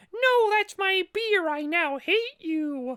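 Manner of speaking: very high, drawn-out little mouse voice. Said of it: "Why is he Mickey Mouse?".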